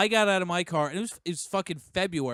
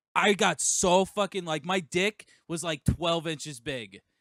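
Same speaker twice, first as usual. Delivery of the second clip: normal talking voice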